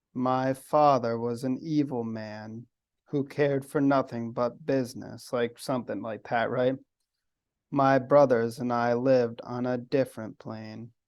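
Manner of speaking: play-acted flat, even, unchanging, dripping monotone. Copying the cadence of a woman she heard: imitating a lady's monotone cadence. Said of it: "I could sort of hear that like cadence".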